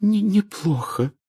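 weak, feeble, very high-pitched voice. Hermione answering Ginny's question, in a weak voice. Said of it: "ответила Гермиона слабым голосом".

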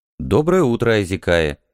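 plain reading voice

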